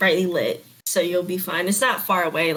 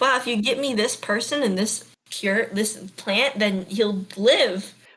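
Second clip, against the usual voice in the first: usual speaking voice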